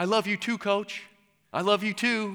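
mock, high shout across a room. Retelling how a boy shouted to a leaving coach: imitating someone shouting. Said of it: "Michael shouts out".

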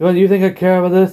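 high, heated, tempered voice.

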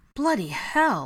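loud, quavering, trembling, quivering outburst. Narrator reading Ron's reply after a man bellows from the kitchen: quivering voice. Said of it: "Ron's voice quivered".

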